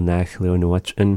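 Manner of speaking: ordinary talk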